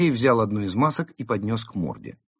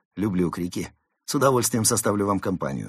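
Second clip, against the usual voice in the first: plain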